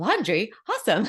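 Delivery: put-on high, super-excited, thrilled toddler voice. Retelling a toddler repeating words while shopping at Costco: imitating Ronan super excited. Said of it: "super excited".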